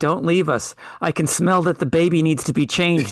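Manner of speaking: put-on panicked pleading voice. Retelling a scene where Reed gives CPR: imitating Reed panicking. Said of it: "Panicking, he's like".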